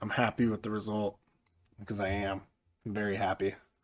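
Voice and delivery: deadpan, flat, one-note monotone. A speaker comments on a match result, in a flat monotone. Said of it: "as you can tell by my monotone voice".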